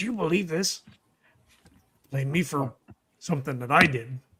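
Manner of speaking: hushed, soft half-whispered aside under the breath. Recounting a scene where he looks off into the distance, half-whispering. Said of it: "he kind of whispers".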